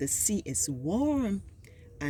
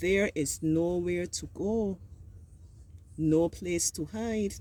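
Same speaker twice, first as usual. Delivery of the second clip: brief break at the comma after go. Reading aloud while observing punctuation, pause after 'nowhere to go'. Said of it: "Auntie paused after she said nowhere to go because there was a comma there".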